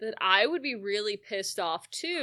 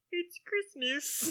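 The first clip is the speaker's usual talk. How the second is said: silly, high, soft frog-puppet voice; 7 semitones higher, 7 dB quieter than usual. Describing Bob Cratchit's scenes, speaker quotes him in Kermit the Frog voice. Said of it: "You're doing a pretty fair Kermit impression".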